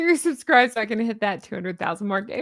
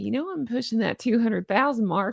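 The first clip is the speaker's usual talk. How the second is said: exaggerated put-on southern US accent. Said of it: "I'm getting more Southern as I talk".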